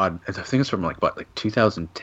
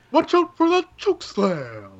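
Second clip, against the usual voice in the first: very high, swooping announcer voice, "slam" drawn out; 12 semitones higher than usual. Joking about an impression of Gallows doing Fink: Finkel announcer voice. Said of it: "Edge's impression is of Gallows doing Fink".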